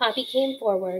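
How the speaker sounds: plain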